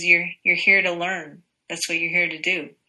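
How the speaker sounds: plain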